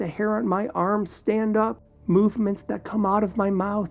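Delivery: plain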